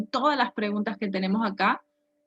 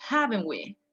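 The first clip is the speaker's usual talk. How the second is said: stress on "haven't", with "we" unstressed. Explaining which word in a tag takes the stress: stress on 'haven't'. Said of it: "we don't stress the last one, but we stress the first word, the, the auxiliary verb".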